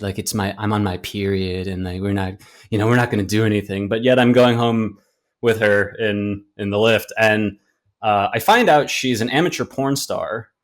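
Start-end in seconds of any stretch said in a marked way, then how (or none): 0.2-3.9 soft whispering voice. Retelling what a woman said in the taxi: imitating her whispering.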